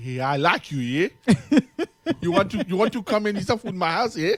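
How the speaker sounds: put-on Nigerian accent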